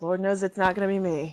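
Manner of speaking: muttering under breath. Role-playing a group scene, voicing another character's remark, muttered under breath. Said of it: "muddle under his breath and go".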